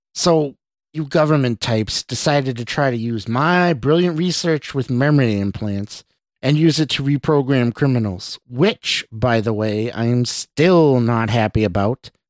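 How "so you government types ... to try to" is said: usual speaking voice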